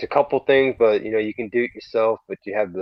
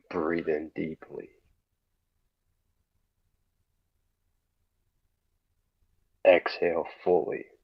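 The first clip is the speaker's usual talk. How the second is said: low, slow, creepy voice; 5 semitones lower, 7 dB quieter than usual. Reading out breathing instructions: creepy stalker phone call voice. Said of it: "You sound like you're doing some kind of stalker phone call".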